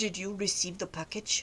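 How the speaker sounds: very deep, very soft, hushed male voice. Retelling a scam phone call, imitating a strange male caller. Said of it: "This strange male voice".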